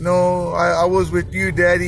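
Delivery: ordinary talk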